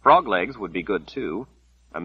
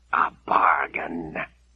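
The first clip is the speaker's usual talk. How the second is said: words hissed out, sharp; 3 semitones lower than usual. A narrator reads a voice's reply to an offered bargain, hissing. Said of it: "the voice hissed".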